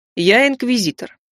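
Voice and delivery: plain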